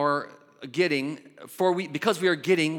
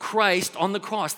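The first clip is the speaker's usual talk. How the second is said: ordinary talk, nothing marked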